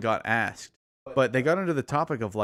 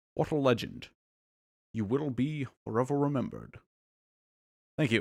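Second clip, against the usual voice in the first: quieter put-on Scottish accent impression; 5 dB quieter than usual. Paying tribute to Sean Connery in a favorite voice, as a Sean Connery impression. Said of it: "That was my tribute to Sean Connery".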